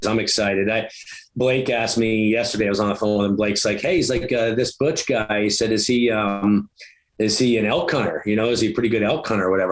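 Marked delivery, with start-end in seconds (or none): none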